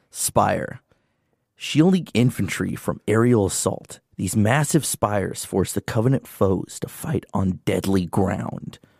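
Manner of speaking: dramatic, theatrical narration. Redoing the spire unit description after a flub, dramatic reading. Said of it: "I gotta do my dramatic reading".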